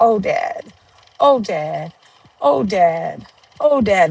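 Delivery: very slow, dazed, stunned, shocked repetition. Retelling what they kept saying at their father's casket: words said in shock. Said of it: "But I was in so much shock".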